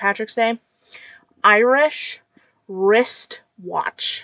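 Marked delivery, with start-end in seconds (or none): 1.4-4.2 slow, deliberate, carefully articulated, very loud speech. Saying a St. Patrick's Day tongue twister, said slowly. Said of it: "if I don't say it that slow".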